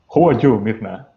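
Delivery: put-on German accent throughout. Narrating a scene, the avatar Moebius greets Mirna, German accent. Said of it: "Says with a German accent".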